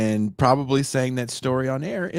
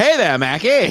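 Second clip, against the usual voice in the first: put-on old-time 1950s radio announcer patter; 6 semitones higher, 7 dB louder than usual. Joking with co-hosts that a colon talks, in a 1950s announcer voice. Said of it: "Your colon's like a 50s announcer".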